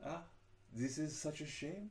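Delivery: bad fake French accent. Repeating a line as a Gallic man, bad put-on French accent. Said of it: "Let me see if I can get a French accent going".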